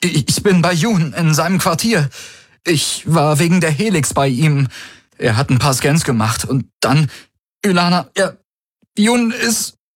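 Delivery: fake breathless distress. A character on a call fakes grief while reporting what happened: feigned breathlessness. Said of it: "Er gab sich atemlos".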